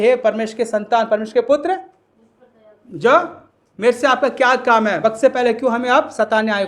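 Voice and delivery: ordinary talk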